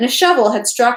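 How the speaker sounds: plain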